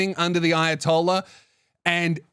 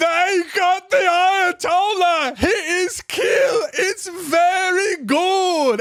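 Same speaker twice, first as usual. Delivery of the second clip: overjoyed, elated, very high, drawn-out, unhurried; 13 semitones higher, 4 dB louder than usual. Retelling how two people reacted after a service, imitating joyful celebration. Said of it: "they're fucking celebrating, like tears of joy".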